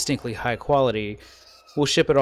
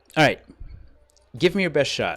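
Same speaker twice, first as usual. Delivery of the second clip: eager, excited, fast, swooping delivery; 3 semitones higher than usual. Voicing a character who accepts a sparring offer: excited. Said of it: "you can tell she got very excited".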